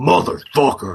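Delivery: very loud, high, hard-boiled tough-guy voice. Showing how the game's hero shouts when shooting someone: Jack Slate voice. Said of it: "that's what Jack Slate sounds like".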